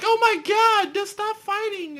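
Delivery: very high, loud, panicked shriek.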